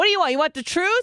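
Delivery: put-on Jersey Italian accent, pitched very high. Retelling what you said to your mom, in a jersey italian accent. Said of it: "turned into some like fucking Italian bitch from Jersey".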